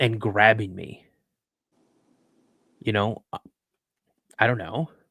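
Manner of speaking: emotional, holding back anxiety. Recalling a frightening encounter while anxiety builds up: getting emotional. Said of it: "I'm getting emotional right now".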